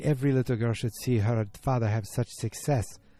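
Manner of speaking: put-on French accent. Recapping a story, the speaker voices Megan's mom in a put-on French accent. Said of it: "I'm doing the accents".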